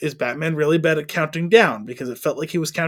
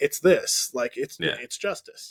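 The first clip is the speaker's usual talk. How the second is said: mock whisper, utterly bored, slow and breathy; 2 semitones lower, 7 dB quieter than usual. Retelling how Batman answers the Riddler's clue: imitating Batman sounding bored.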